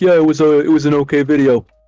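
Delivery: put-on flat, unimpressed, judgy, critical monotone. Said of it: "a moist, critical voice".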